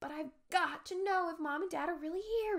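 whispering. Hiding behind a tree trunk from people below, he answers, whispered. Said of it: "he whispered, his eyes frightened, pleading".

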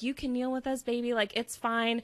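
put-on tearful pleading voice. Retelling a woman pleading with a cop: imitating a tearful plea. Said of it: "she was pleading in tears".

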